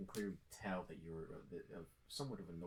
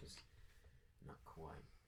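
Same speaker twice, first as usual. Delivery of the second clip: very quiet, hushed whispered aside; 2 semitones lower, 10 dB quieter than usual. Voicing a character who pulls a player aside discreetly: whispering. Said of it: "he whispers".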